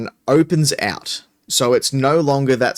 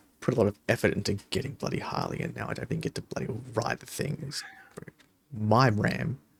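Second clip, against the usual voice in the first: grumbling quietly, quieter; 3 semitones lower, 13 dB quieter than usual. Voicing a character grumbling about not riding the ram: muttering under his breath. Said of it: "muttering under his breath".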